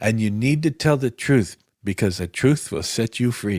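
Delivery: imitated Filipino accent. Retelling what Roger told a candidate on the phone, imitating Roger's Filipino accent. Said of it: "so he had like the Filipino accent".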